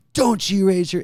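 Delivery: loud, high-pitched, scolding motherly yell. Retelling being scolded by mom as a kid, imitating mom yelling. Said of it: "she's yelling at me".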